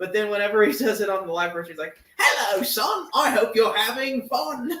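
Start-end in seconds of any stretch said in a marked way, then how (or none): 2.2-4.8 extra goofy, exaggerated, high, drawn-out character voice. Describing how he does the line on the live version, extra goofy voice. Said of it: "he like plays extra into the goofy voices".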